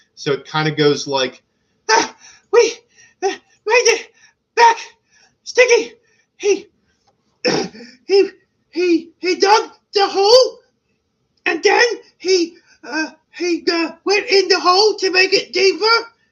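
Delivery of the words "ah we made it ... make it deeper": out of breath, panting, higher and louder. Voicing two winded goblin messengers reporting back: out of breath, breathing heavily. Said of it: "they keep interrupting each other because they're breathing really heavy".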